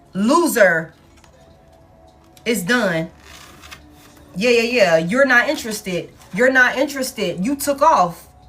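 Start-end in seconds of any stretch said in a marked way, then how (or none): 0.1-0.9 heavy emphasis on the word "loser". Reading tarot cards about someone's failure, heavy emphasis on loser. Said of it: "Heavy emphasis on loser".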